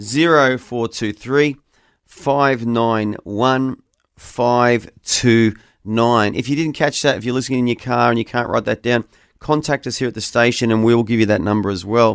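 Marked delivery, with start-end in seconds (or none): 0.0-6.3 slow, careful, deliberate digit-by-digit reading. Radio host repeats a phone number for listeners, reading slowly. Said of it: "I'm going to read that again slowly".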